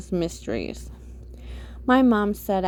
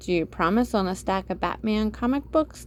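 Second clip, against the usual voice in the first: plain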